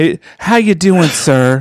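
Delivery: high-pitched, poorly done put-on Southern accent. Imitating a phone company greeting, in a bad put-on Southern accent. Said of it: "That was the most worthless Southern accent I've ever done".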